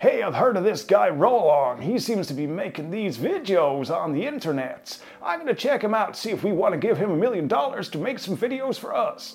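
put-on American accent that wanders off. Playing a big American corporate executive, in a wandering American accent. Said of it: "Don't quite know where I was with that American accent".

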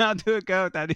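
put-on high, loud, babyish toddler voice. Retelling a funny clip, imitating a baby: imitating a baby.

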